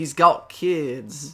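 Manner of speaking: put-on slipping partly into a British accent. Speaker recapping pre-match talk about kids, slipping into a half British accent. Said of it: "I broke into a half British accent".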